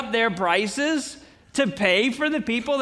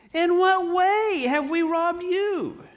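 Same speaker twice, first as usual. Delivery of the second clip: a little whiny, pitched-up, complaining tone; 6 semitones higher than usual. Reading scripture aloud, the speaker voices the listeners' reply in a mock-whiny voice. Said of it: "in probably a little bit of a whiny voice".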